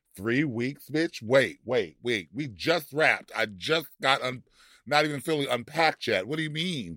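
ordinary talk

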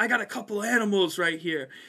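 loud, booming, bellowing yell. Retelling the wrestling coach marching him and another guy down the hallway, retelling the coach's yell. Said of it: "And he yells".

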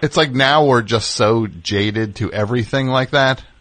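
ordinary delivery

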